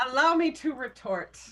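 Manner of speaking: high, loud shouted retort.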